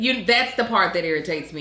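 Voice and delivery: plain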